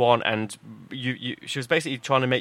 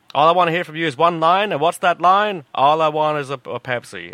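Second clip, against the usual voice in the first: nasty, fake American accent, raised; 4 semitones higher, 5 dB louder than usual. Retelling a woman who repeated herself to each person: nasty put-on American accent. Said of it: "really nasty put-on, if it was put-on, American accent".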